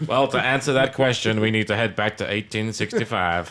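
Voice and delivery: ship's computer voice, storyteller-like. Answering as a ship's computer voiced like a celebrity: Morgan Freeman as ship's computer. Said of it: "a ship's computer voice".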